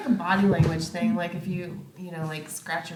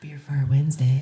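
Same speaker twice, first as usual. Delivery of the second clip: sultry, seductive put-on voice; 3 semitones lower, 5 dB louder than usual. Asked by another speaker to say the phrase in their sexy voice. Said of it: "Say that in our sexy voice".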